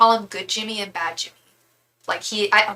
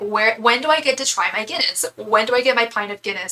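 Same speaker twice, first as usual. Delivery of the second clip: usual speaking voice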